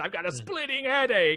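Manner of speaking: eerie mad-scientist voice. Retelling a haunted house scene from an episode: creepy scientist voice. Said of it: "John Goodman is the creepy scientist".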